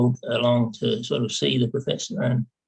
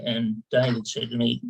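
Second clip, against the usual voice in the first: plain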